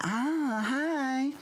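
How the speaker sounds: very high, bad put-on campy voice.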